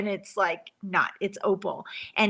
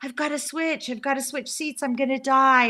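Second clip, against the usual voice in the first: put-on panicked, freaked-out man voice, higher; 4 semitones higher than usual. Retelling a seatmate's panic about the seats: imitating a freaked-out man. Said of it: "all freaked out".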